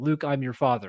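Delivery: plain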